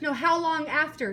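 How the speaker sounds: insistent, pressing delivery. Asking a man who is hard of hearing again, talking loudly. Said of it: "if I'm talking loud, I'm not yelling".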